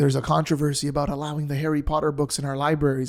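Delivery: plain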